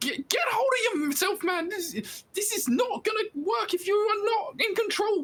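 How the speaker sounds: very high-pitched character voice, pushed way up. A character responds to a companion collapsing in fits of loathing, high-pitched voice. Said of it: "you hear the high-pitched voice going".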